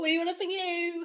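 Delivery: mock fake friendliness. Mocking a streamer greeting viewers to subscribe: put-on fake nice voice. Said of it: "Why is she being a little fake nice?".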